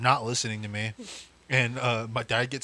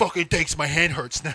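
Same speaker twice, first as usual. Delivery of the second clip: play-acted irritated dad voice, raised, pissed off; 5 semitones higher, 5 dB louder than usual. Retelling how a dad reacted after hurting his hand: imitating angry dad. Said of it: "he'd get pissed off at you".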